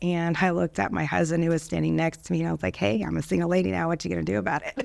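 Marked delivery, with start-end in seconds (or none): 2.8-4.8 put-on sarcastic tone. Retelling own joking words to husband after a records mix-up: retelling a sarcastic quip. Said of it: "It was sarcasm".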